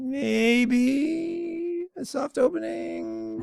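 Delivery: whiny, high sing-song, "maybe" drawn out. After learning the other speaker got invited and they didn't, in a whiny voice. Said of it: "I'm getting the whiny voice going on here".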